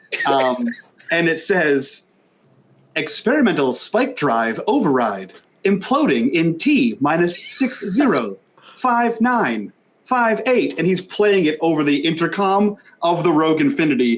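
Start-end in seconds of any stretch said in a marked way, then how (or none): 2.9-10.8 straight-up robot voice. Voicing a message played over the Rogue Infinity's intercom, straight-up robot voice. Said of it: "it's a straight up robot voice".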